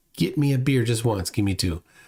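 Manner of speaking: plain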